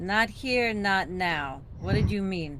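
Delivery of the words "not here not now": put-on halting, slow, broken Russian accent. Looking down at this guy, the speaker's character talks in a broken Russian accent. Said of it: "in my broken Russian say".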